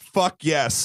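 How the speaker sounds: ordinary talk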